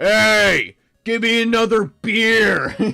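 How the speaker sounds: very loud, high yell with a drawn-out "hey". Mocking a football-watching dad, the speaker imitates him yelling to his son. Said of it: "just like yelling to his son".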